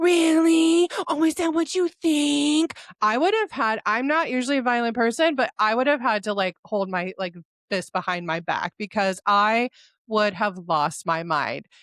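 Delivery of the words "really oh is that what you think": put-on mocking, mimicking voice, higher. Retelling how Liz mimics a castmate: imitating Liz mimicking mockingly.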